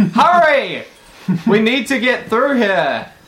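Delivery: yelling out. Playing a character warning someone about a traitor: yelling out a warning. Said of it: "and we yell out".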